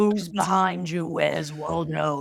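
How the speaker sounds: put-on scary horror storytelling voice. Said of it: "like a horror version of that".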